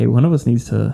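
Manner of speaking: usual speaking voice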